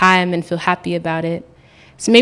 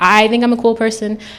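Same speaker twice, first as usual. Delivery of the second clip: usual speaking voice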